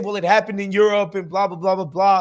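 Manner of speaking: ordinary talk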